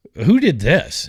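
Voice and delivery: snooty, condescending, talking-down tone, pitched high. Retelling what a surgeon asked about his leg: imitating a condescending tone. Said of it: "in kind of a, um, uh, condescending way".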